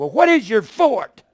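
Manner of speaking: mad, heated, angry voice. Recounting yelling back at a preacher on TV; retelling yelling at TV. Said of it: "I yelled at this TV".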